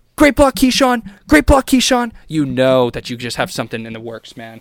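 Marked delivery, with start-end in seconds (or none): 0.2-2.1 shrill, very high yelling. Retelling what the coach yells during a play: imitating Briles yelling. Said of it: "yelling at him".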